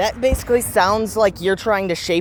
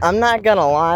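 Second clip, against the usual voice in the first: plain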